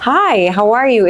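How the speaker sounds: very slow, high-pitched phone sales voice. An agent shows new agents the phone selling voice, higher-pitched. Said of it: "I go up an octave".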